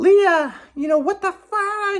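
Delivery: put-on, very high, drawn-out yell. Retelling how mom reacted to a broken salt shaker: imitating mom yelling. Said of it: "She's yelling at her, screaming at her".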